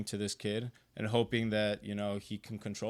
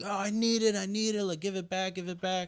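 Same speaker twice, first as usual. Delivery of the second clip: mock very high, shrill tantrum scream of a kid; 10 semitones higher, 3 dB louder than usual. Describing kids cut off from video games by their moms: imitating kids screaming.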